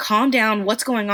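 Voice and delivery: ordinary talk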